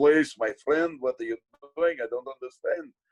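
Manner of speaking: put-on Russian accent. Retelling improvising at an audition when the other actor was confused: put-on russian accent. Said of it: "immediately grabbed a Russian accent and was like".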